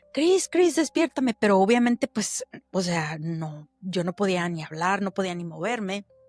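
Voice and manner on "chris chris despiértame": put-on high, loud shouted cry. Retelling calling out to the husband during sleep paralysis: imitating a shout for help. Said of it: "yo le gritaba".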